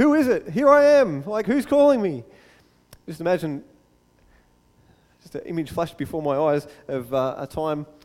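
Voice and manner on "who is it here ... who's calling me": high, loud, panicked, terrified calling out. A speaker imagines Moses hearing God call his name: imitating Moses's terror. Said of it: "this moment of terror".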